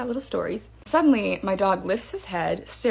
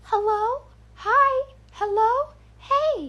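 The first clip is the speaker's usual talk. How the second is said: very high, very slow, drawn-out, eerie creepy doll voice. Retelling a strange voice circling the fence line; creepy doll voice. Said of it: "just like that, creepy doll voice".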